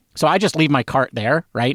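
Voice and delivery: normal talking voice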